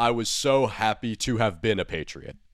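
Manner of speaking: ordinary talk, nothing marked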